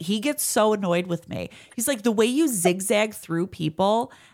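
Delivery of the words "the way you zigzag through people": ordinary talk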